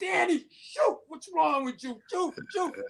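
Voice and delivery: very high-pitched, loud holler. Retelling coaching from the sideline, urging a player: retelling own yell. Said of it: "and I'm yelling".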